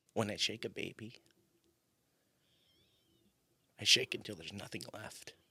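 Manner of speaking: big theatrical dramatic delivery, low and swooping. Performing a bit for a listener, in a dramatic voice. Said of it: "your dramatic voice".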